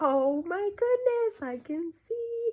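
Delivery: put-on delighted, amazed cry at very high pitch. Retelling the moment they could read the sentence sheet, reenacting past amazement. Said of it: "the whole amazement in my voice".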